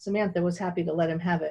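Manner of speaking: ordinary delivery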